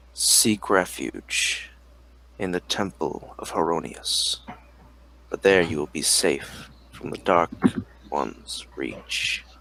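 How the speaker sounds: deep, low, resonant, thrumming voice. Narrator voicing an unseen presence speaking to the adventurer, deep thrumming voice. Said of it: "you can hear this deep thrumming voice".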